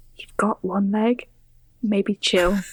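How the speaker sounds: hushed, quiet whisper. A player's character speaks aside to Ordok: whispering. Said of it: "whisper to Ordok".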